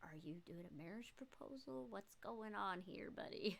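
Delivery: very soft, hushed whisper. Voicing an employee who questions a customer: whispering employee. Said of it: "the guy's just gonna look at Theo and just whisper".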